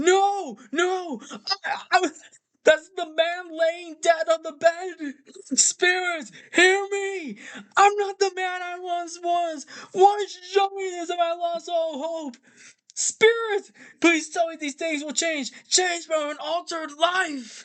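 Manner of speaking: high-pitched, desperate, begging voice. Retelling a film scene where Scrooge begs the spirit: imitating Scrooge pleading. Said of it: "And Scrooge is like".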